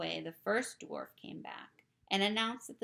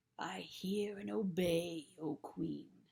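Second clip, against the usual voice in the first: low, drawn-out, growled wolf voice. Narrator reads the wolf answering the Queen in a growling wolf voice. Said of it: "growled the wolf".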